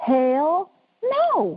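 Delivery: animated, big swooping pitch up and down. Answering a yes-or-hell-no question in Chris Tucker voice. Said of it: "This is a Chris in my Chris Tucker voice".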